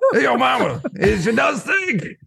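very high, nerdy cartoon voice. In a role-play, a character answers an insult about his mother, Double D's voice. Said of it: "He's stuck with Double D's voice".

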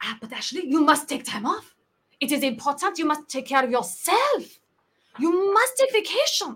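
put-on French accent. Retelling colleagues lecturing about vacation on a call: imitating french colleagues in a french accent. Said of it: "part of my French accent to the French people".

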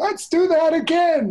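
raspy, very high voice. Imagining the dead stuntman sitting up in the coffin: raspy Super Dave impression. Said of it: "that was a great impression".

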